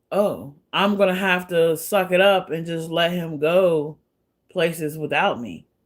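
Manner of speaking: normal talking voice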